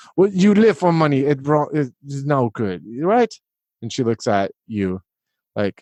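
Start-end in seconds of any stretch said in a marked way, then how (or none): 0.2-3.3 disapproving, high, swooping motherly voice. Acting as the mom praising her son's friends: acting as the mom. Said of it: "and then she's like".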